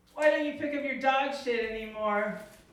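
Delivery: ordinary delivery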